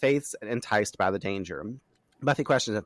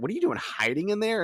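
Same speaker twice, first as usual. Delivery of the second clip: acted sarcastic, needling, snarky tone, pitched up; 10 semitones higher than usual. Retelling a snarky character asking why another is hiding: imitating a snarky question. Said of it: "she's very snarky".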